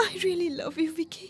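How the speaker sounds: speaking through tears. [name] answers Vicky, who is begging her to stop crying, crying while saying it. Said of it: "please আর কেঁদো না".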